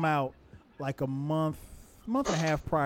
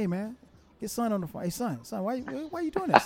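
teasing, joking, pitched-up playful tone; 7 semitones higher than usual. Retelling how the sons mimic their father's phone talk: imitating Dion and Cameron. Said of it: "they mimic".

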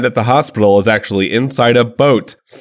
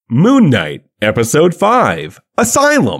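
audiobook narrator voice, very drawn out, swooping; 3 semitones higher than usual. Announcing the episode title after the ad break: reading like an audiobook. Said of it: "it sounds like you're reading an audiobook".

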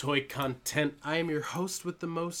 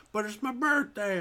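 play-acted high, slurred drunken man's voice; 6 semitones higher than usual. Retelling meeting a really drunk guy at the door: imitating a drunk man. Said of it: "this really drunk guy's like".

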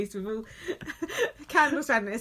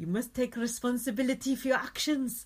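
put-on South African accent; 3 dB quieter than usual. Listing the accents they can do, now a South African accent. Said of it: "I can do South African as well".

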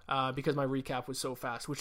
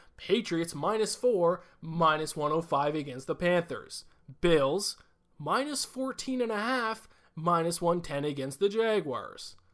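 put-on, exaggerated announcer voice; 4 semitones higher, 5 dB louder than usual. Reading out betting lines in a Johnny Broadcast announcer voice. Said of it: "I'll just go super like Johnny Broadcast here".

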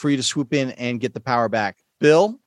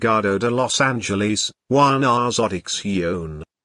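bad fake British accent, much lower; 5 semitones lower than usual. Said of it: "It's a bad British accent".

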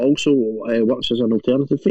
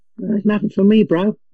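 put-on high, slow, drawn-out New Zealand kid accent; 9 semitones higher than usual. Joking about kids looking up the chimney for Santa: imitating a New Zealand kid. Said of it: "all these wee Waynes looking up the chimney going".

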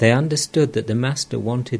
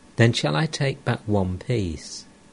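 ordinary delivery, nothing marked

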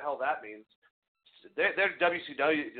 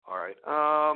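usual speaking voice

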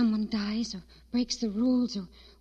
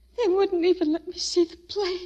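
high, tearful voice, speaking through sobs; 7 semitones higher than usual. Found sobbing in the basement and asked why, she answers, crying. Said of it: "Why are you crying?".

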